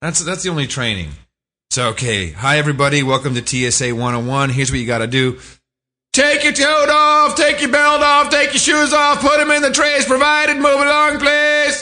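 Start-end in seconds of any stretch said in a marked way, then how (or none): 2.3-11.8 very high-pitched barked yelling, rising pitch. Mocking airport security training, imitating a yelling TSA trainer. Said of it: "the only training the T S A gets is how to yell at you".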